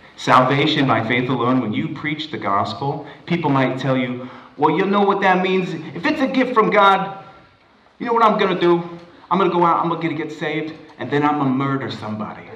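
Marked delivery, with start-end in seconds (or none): 4.8-12.5 put-on, pitched-up Brooklyn accent for dramatic effect. Speaker acting out what people might say when told the gospel, in a Brooklyn accent. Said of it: "I'm going to be using a Brooklyn accent for dramatic effect".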